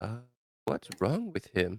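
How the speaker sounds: soft, hushed half-whispered aside. Playing Bryce, who half-whispers over to Kaito, half-whispering. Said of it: "Bryce is gonna whisper over to Kaito".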